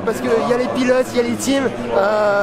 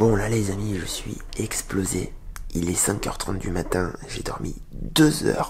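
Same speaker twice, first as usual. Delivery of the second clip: soft, raspy, hoarse, spent voice, barely there; 8 dB quieter than usual. At five thirty in the morning after two hours' sleep, speaking with lost voice. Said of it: "J'ai plus de voix".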